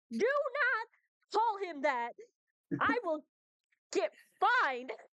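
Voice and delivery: very high, loud hollering from a distance. As Bren, hollering at someone who called Quinn goat face: hollered. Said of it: "you hear hollered from Bren".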